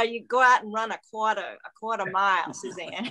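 mock strong Boston accent. Recalling a woman who told her to run a quarter mile: imitating Diane Perry's Boston accent. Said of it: "She had a wicked Boston accent".

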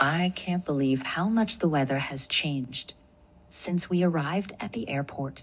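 low, put-on American accent, read aloud. Asked to read the same sentence again, reading it in an American accent. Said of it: "Read that sentence with American accent".

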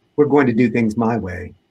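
ordinary delivery, nothing marked

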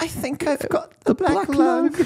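very high-pitched, squeaky character voice. Retelling a favorite movie moment where a character coughs, in a Salad Fingers impersonation. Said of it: "more like a salad fingers impersonation".

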